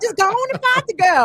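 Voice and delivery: very high, sweet Southern drawl. Retelling how a woman from Houston urged a fight, imitating Sister Erica's Southern drawl. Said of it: "you know that very sweet Southern drawl".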